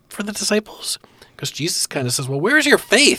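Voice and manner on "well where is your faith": emphatic, pointed, chastising tone, key words leaned on. Quoting the master's reply to his scared disciples, quoting with added emphasis. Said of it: "I'm adding some emphasis there with my voice".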